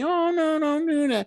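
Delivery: gentle, very high voice with mild reproachful tone. Telling a puppy that pees on the floor not to, soft voice. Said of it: "you in this soft voice say".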